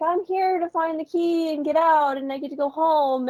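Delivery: super sweet, saccharine, sugary, high voice. Retelling a character telling Gertie her plan, in a put-on super sweet, saccharine voice. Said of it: "her voice is like super sweet and saccharine".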